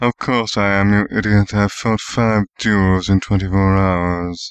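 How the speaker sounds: muttered, low. Narrator reading a hurt man's reply to the boy, muttered. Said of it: "Severus muttered".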